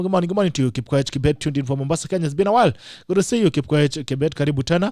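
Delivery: ordinary delivery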